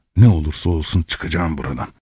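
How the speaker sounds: ordinary delivery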